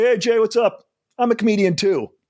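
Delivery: put-on high, cocky, young-sounding voice. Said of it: "I was so cocky".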